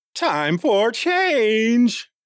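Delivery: put-on cracking teen voice. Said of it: "Was I like Peter Brady?".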